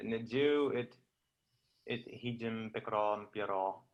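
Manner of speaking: ordinary talk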